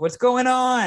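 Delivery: shrill, very high, loud yelling call. Retelling how a man called out to you at the rink, imitating someone yelling. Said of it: "he's like yelling".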